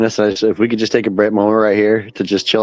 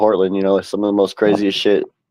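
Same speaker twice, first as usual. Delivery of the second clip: ordinary talk, nothing marked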